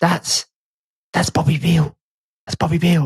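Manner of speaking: voiced stage whisper, secretive tone. Recounting a movie theater moment, the speaker repeats a friend's whisper. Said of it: "he whispers".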